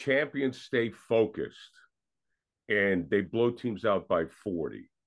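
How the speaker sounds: ordinary talk, nothing marked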